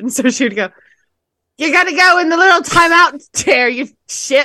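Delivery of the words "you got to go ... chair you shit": bad British accent, very high-pitched, shrill and loud. Retelling what the Super Nanny would say, in a bad British Super Nanny impression. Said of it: "They were usually British".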